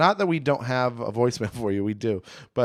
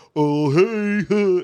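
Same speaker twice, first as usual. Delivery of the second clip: high, loud put-on Southern dumb-guy voice; 7 semitones higher, 6 dB louder than usual. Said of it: "the go-to impression of, like".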